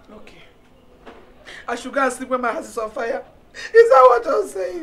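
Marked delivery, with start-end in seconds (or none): 0.1-3.2 tearful, crying speech. A mother answers someone telling her it's okay, crying. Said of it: "stop crying".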